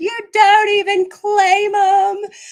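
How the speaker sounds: mock bawling, very high, very loud, drawn out. Retelling confronting the dad about the sons: retelling a crying outburst. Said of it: "I started bawling my eyes out".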